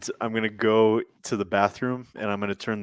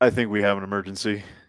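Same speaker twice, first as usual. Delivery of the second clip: normal talking voice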